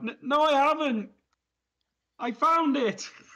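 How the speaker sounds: very high-pitched, drawn-out, instinctive yelled cry. Answering an accusing voice in the darkness, in character: instinctive yell. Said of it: "instinctively yell out in the darkness".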